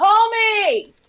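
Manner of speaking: very loud, high-pitched yell. Playing a character who stops running and calls after someone: yelling out. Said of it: "I'm gonna hulk up and I'm gonna yell out".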